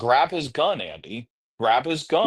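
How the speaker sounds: plain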